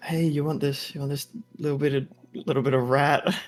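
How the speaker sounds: hushed whisper. Narrating a character kneeling down to offer creatures a rat: whispering. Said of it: "whisper to them".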